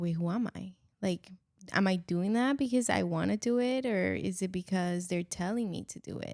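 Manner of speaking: plain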